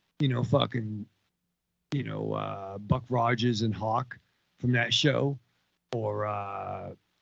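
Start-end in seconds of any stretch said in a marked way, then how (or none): none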